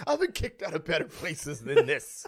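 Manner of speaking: mock tipsy, drunk-sounding girl voice. Imagining a last tweet after getting kicked out: pretend drunk girl kicked out. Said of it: "That's exactly it".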